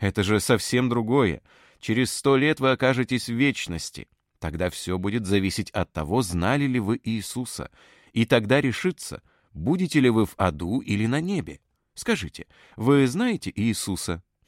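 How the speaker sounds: ordinary delivery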